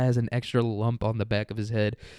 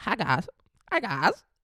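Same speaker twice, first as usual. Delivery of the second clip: high, slow, stretched-out fake Chinese accent; 8 semitones higher than usual. Showing how someone runs through accents, now doing a Chinese one. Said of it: "Do it Chinese".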